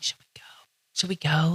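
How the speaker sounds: mock whispering. Retelling hiding from police under a trailer: imitating own whisper. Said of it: "Like, whispering".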